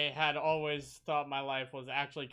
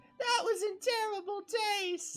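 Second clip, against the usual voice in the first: acted-out scream. Retelling a cartoon scene, imitating a scream. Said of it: "Goku literally in that scene screams".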